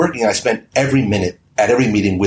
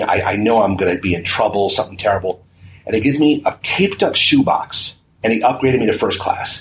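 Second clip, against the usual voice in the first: ordinary talk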